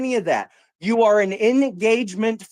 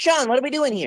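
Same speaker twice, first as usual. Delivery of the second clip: mocking parroting voice, higher; 3 semitones higher than usual. Mocking the other speaker's repeated line during an argument: mocking imitation of the other speaker. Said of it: "every time I say something, it's".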